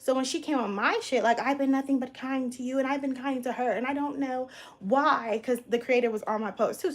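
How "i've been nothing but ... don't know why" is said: mock passive-aggressive, victim-like voice. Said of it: "Basically very passive aggressive".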